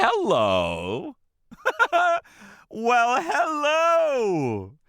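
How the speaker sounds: high, swooping flirtatious tone. Trying out advice on approaching a woman, flirty hello. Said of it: "say hello in a flirty way".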